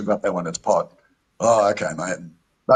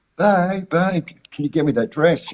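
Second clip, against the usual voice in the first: put-on slow, high, drawn-out, sedated whine; 7 semitones higher than usual. Retelling what she asked him while on Rohypnol, imitating a whiny drugged voice. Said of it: "the Rohypnol voice is very whiny".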